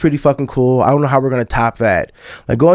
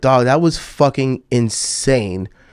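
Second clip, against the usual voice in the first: usual speaking voice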